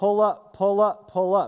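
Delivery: very loud, automated cockpit alarm voice. Retelling a crashed flight's voice recording, imitating a cockpit warning voice. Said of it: "You hear the voice saying".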